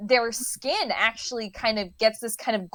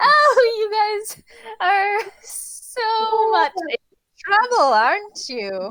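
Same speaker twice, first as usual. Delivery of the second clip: very high-pitched, giggling through the words; 11 semitones higher, 6 dB louder than usual. Voicing Doris, who teases the players about their trouble: giggling while speaking. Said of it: "Doris just kind of giggles and is like".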